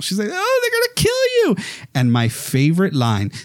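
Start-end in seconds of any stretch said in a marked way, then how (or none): 0.3-1.6 very high-pitched hysterical, panicked cry. Retelling a film's final showdown, quoting Alice: imitating hysterical panic. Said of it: "And Alice is, like, hysterical".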